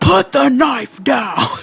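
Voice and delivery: very high, shrill, loud mock screaming. Retelling a movie scene where police rush in: imitating police screaming. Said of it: "they're screaming".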